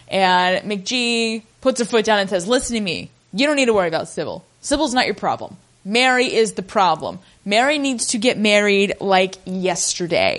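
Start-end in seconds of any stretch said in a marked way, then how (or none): none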